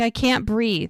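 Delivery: frantic, hysterical, panicked voice. Retelling a woman's panic while a midwife checks on her: imitating hysterical panic. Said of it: "Charmaine is hysterical".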